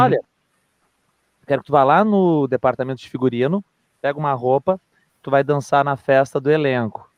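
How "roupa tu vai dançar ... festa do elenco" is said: ordinary talk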